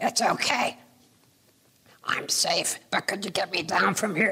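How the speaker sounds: tiny, small voice of a little figure. Telling a story, voicing a little purple man stuck up high: little purple man's voice. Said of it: "this little purple voice way up high saying".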